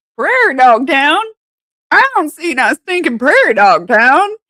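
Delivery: put-on drawling Missouri accent. Quoting the speaker's dad, in a Missouri drawl. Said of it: "his, like, Missouri drawl coming out".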